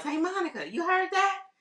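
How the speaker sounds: high, teasing call-out, yelled loud. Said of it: "Steve Harvey yells".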